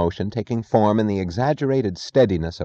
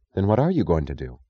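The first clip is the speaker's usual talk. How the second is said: usual speaking voice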